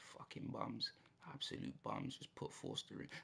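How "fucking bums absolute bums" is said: seething, fed-up fury, rough and creaky. Playing a football game, fuming at his team; fuming angry. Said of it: "I am so angry right now".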